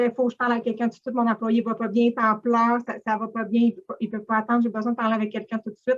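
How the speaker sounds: ordinary talk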